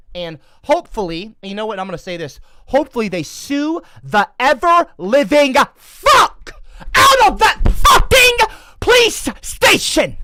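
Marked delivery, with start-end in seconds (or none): 2.6-10.1 worked-up, very loud, rising angry rant. Speaking to listeners about a police station, getting worked up. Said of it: "I'm getting worked up".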